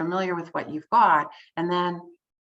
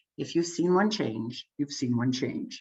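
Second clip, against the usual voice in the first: grave, weighty, deep and very serious voice; 5 semitones lower than usual. Quoting John Kotter from a video once seen: imitating John Kotter's very serious voice. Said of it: "Very serious voice".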